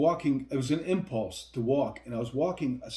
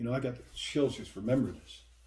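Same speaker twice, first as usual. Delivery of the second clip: ordinary talk, nothing marked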